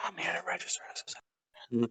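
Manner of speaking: barely audible, very quiet breathy whisper. Retelling what a man said at the desk: imitating someone whispering. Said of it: "Whispering and shit".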